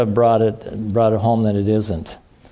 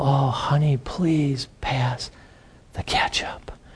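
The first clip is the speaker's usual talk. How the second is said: quieter, slower put-on spiritual voice; 3 semitones higher, 6 dB quieter than usual. Imitating how some people talk about spiritual things, in a spiritual-talk voice. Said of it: "do you talk like that at home? Do you go".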